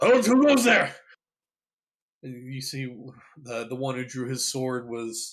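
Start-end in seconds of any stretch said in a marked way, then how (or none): 0.0-0.9 alarmed, startled yell, very high and loud. Narrator voicing an armed guard confronting the listeners, startled young guard. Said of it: "And they jump and draw their swords".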